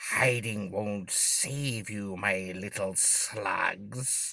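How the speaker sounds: very drawn-out, soft, slow menacing hiss. Narrating a fantasy adventure, reading a magic user's taunt: hissing. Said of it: "he hisses".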